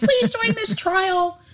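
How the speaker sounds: very high-pitched radio spot read. Retelling a radio ad voice for clinical trials: imitating a high-pitched ad voice. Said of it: "this high-pitched".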